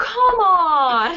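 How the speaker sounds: loud exasperated yell, "on" drawn out. Retelling a reaction to a movie: imitating screaming at the screen. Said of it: "screaming at my screen".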